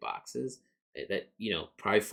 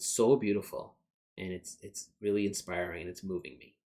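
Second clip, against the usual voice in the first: ordinary talk, nothing marked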